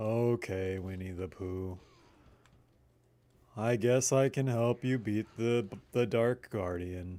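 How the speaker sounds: lazy cartoon voice, sounding lazy like a cartoon. Doing another voice for the same request: Eeyore voice. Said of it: "kinda sounds like an Eeyore".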